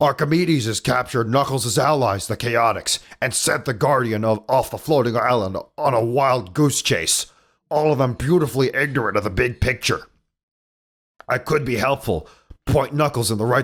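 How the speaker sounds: darker, rasping, gravelly cartoon character voice. Reading a character's lines about Knuckles aloud, in a darker gravelly voice. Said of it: "it's like a darker voice and graggly too".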